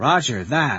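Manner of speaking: ordinary delivery, nothing marked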